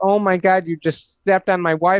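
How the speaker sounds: put-on screaming. Retelling a passenger's prank at an airline desk: imitating someone screaming. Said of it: "he screamed".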